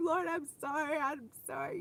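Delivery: put-on sobbing, tearful, crying, repeated. Retelling an apology to the lord after a tantrum: retelling own crying apology. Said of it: "I was just crying and like".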